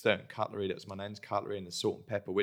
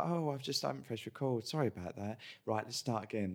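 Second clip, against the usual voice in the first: unbothered, careless, offhand couldn't-care-less tone; 3 semitones higher, 3 dB quieter than usual. Retelling how an interviewer apologised for not recording: imitating someone's careless manner. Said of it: "the way she was just like".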